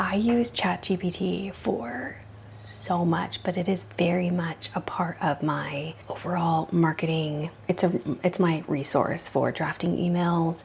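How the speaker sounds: hushed whisper. Speaking into a microphone so as not to wake someone nearby, whispering. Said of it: "I'm whispering because I think Eli might have woken up".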